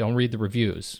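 ordinary delivery

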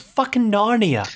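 put-on English accent. Quoting a movie character's line, in an attempted English accent. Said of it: "Is that your attempt at an English accent?".

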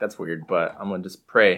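plain

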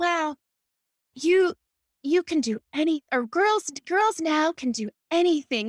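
mimicked soft-spoken voice. Recalling what a woman used to tell the speaker, imitating her soft-spoken voice. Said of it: "she always had this soft spoken voice".

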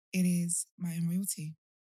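relaxed, easygoing, mellow, laid-back tone. Podcast host introducing herself at the start of the episode, in a mellow voice. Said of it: "your voice is very, mellow".

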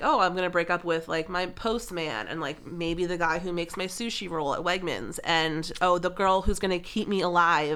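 ordinary talk, nothing marked

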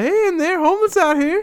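very high-pitched, announcer-style spokesman voice. Retelling what a man said at the car window: imitating a spokesman-like pitch. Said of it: "he sounds like he's, he's working for the homeless".

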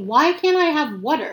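slow, high-pitched indignant anger. Retelling asking why they can't have water after the talk, retelling an angry question. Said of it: "I'm pissed".

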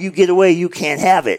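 very high, shouted put-on voice. Retelling a guy running at officers, imitating someone yelling. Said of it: "he's yelling".

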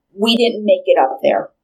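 normal talking voice

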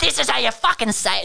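scolding shout, pitched way up and rough. Retelling how old people yelled at the trivia host, mock-yelling. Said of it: "just yelling at me".

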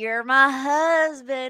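loud, sudden, put-on country accent. Retelling a reality show wedding celebration, imitating Colleen's country accent. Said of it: "Colleen got this country accent all of a sudden".

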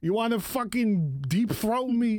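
New Jersey accent. Podcast co-hosts riffing on bits: jersey accent. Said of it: "I don't know why I have like a Jersey accent".

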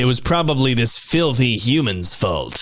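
disapproving, judgmental, otherworldly alien voice. The speaker acts out an alien character in a judgmental alien voice. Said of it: "That's my alien, judgmental alien voice".

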